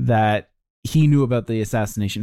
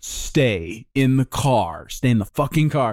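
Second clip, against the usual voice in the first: put-on commanding manner; 2 semitones higher than usual. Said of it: "Like he's commanding a dog".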